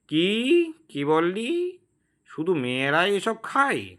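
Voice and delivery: screechy, shrill, nasal ghost woman's whining voice. A ghost woman calls out from outside the window, in a shrill nasal voice. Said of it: "খ্যানখ্যানে গলায় কে বলে উঠল".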